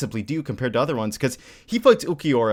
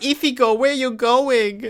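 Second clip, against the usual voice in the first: put-on lisping baby voice, much higher; 10 semitones higher, 3 dB louder than usual. Fans discussing a show mimic how a character talks: Nell's lisping baby voice. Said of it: "She speaks like with with a lisp".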